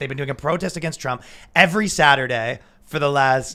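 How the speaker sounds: ordinary talk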